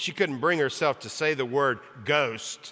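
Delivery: ordinary delivery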